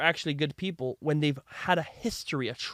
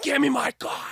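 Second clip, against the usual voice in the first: shrill yell pitched very high; 10 semitones higher than usual. Retelling yelling at the guys stealing his cards: retelling his own yell. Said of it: "So I yelled at them".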